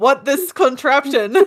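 simple, broken caveman speech with words dropped. Joining in imitating a husband at the car lot: imitating James as a caveman. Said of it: "he was being a caveman that day".

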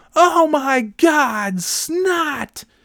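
very slow, very high yell, "God" stretched. Retelling what a playground monitor said in front of everyone, retelling a yell. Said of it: "She's like yelling".

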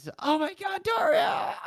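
very high, stretched-out put-on squeal. Retelling how they all started screaming a name: imitating people screaming. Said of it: "they all started screaming off the top of their lungs".

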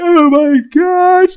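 play-acted very high, very loud sobbing wail. Retelling getting a phone call from New York, the speaker re-enacts bursting into tears. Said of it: "I just start crying like".

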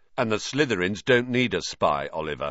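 plain

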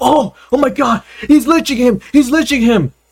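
fake panicked shouting, high-pitched.

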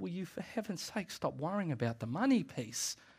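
quiet put-on exasperation. Preaching on a Bible passage, voicing how Jesus might say it, mock-exasperated. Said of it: "is the tone I think he would say it".

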